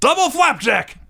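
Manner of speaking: put-on top-of-the-lungs shout, very high. Recounting a wrestler loudly calling spots during a tag match, imitating a shout at the top of the lungs. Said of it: "he just shouts at the top of his lungs".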